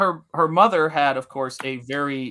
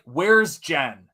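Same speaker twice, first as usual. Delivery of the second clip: put-on American accent. Retelling a phone call from a stranger, imitating an American accent. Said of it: "in an American accent says".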